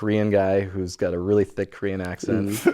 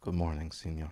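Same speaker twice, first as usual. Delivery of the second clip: put-on solemn voice, lower and quieter; 4 semitones lower, 12 dB quieter than usual. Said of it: "Real serious".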